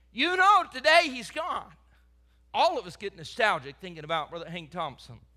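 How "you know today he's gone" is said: raised, high-pitched, sneering, mocking jeer. A speaker retells what the prophets said to a fellow prophet, retelling a mocking taunt. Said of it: "saying in a mocking tone".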